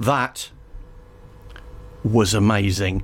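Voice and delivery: mock deadpan, low, flat, dry, expressionless. Retelling the VJ's reaction when it was done, imitating a deadpan delivery. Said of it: "he kind of did this deadpan thing".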